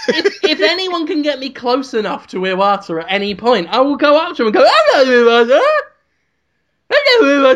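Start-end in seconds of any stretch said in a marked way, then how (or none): 4.7-7.6 loud, put-on mocking voice. Speaker imagines going up to someone and greeting him, in a different voice. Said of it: "I am doing a different voice".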